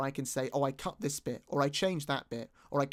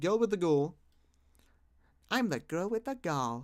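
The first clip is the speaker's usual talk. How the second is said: clumsy, bad, put-on British accent; 3 semitones higher than usual. Saying the character title girl with the ghoul in a bad british accent. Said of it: "that was my British accent coming out".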